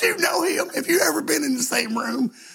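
put-on weepy, very high tearful pleading. Retelling a fan's tearful question at a bus stop: imitating a woman crying. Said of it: "And she was crying".

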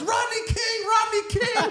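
shrill, high-pitched shouted cry, repeated. Telling a movie scene where people tackle Sinbad, act out his line, imitating someone yelling. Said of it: "And Sinbad yells".

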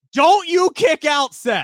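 very high, loud, stretched-out put-on screaming. Retelling screaming at the kicker from the Bengals press box: retelling own scream. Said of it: "I'm literally screaming".

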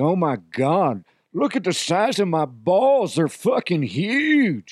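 slow drawl, words stretched out hugely. Describing one of the easiest voices they can do, in Cowboy DeHuff voice. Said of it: "Cowboy DeHuff".

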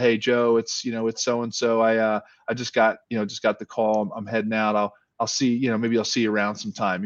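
ordinary talk, nothing marked

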